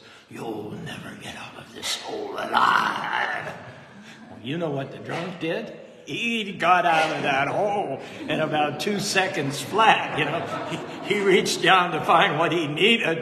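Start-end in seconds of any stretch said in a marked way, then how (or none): 0.3-3.5 very deep, low, scary, spooky ghost voice. Telling a story, the speaker voices a man in the corner scaring a drunk in a deep, scary, ghostly voice. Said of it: "in a really deep, scary, ghostly voice".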